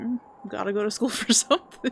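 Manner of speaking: ordinary talk, nothing marked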